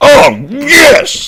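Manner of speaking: shrill, very high, very loud triumphant excited yell. A speaker reacts to getting one right instantly: excited shout. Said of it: "Sorry for shouting".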